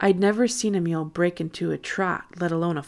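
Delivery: plain reading voice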